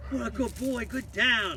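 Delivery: very high, loud, gushing excited tone. Showing how to praise a dog after the down command: excited praise voice. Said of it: "So into my second voice".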